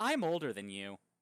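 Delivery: bone-dry, unmoved, dead straight delivery, no reaction. Voicing a character who answers the players with a smile: deadpan. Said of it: "she's looking at you deadpan with a smile".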